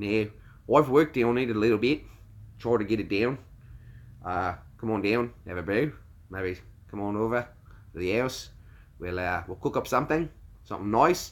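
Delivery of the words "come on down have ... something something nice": soft put-on Australian accent. Speaker tries out an accent they have worked on, Australian accent. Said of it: "My Aussie isn't too bad".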